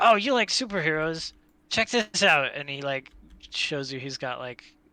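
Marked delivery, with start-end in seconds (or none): 0.0-2.5 high-pitched, eager voice bursting with excitement. Voicing a character who spots someone's action figure, excited. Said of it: "I think in his excitement".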